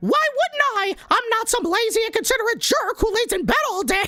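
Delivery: very high kids'-cartoon character voice. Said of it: "you wanted to hear me do some voices".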